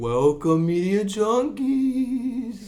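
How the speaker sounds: put-on very high spooky voice, "Junkies" drawn out. Opening the podcast episode with the others: put-on spooky voice. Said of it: "as you can tell by our spooky voices".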